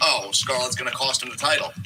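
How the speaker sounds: usual speaking voice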